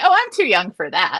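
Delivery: lighthearted laughing through the words. Retelling a reply to the eye doctor: retelling own laughing reply. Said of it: "and I laugh".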